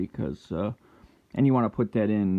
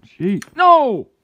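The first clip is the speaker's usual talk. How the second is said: very loud, very high shrill shrieking yell; 12 dB louder than usual. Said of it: "Sorry for the yell".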